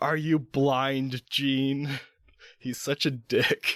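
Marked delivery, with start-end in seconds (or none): 0.0-1.9 high, drawn-out, furious shouting outburst. Recapping a comic issue, the speaker reads a character's line: shouting. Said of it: "he just shouts".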